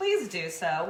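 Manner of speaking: ordinary delivery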